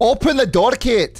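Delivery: put-on Scottish accent, loud and high. Playing a man outside the door begging Kate to open it, in a Scottish accent. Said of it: "He's from a Scottish accent".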